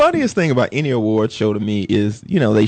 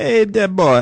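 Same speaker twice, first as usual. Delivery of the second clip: terrible put-on Caribbean accent, pitched up; 8 semitones higher than usual. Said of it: "that's a horrible accent".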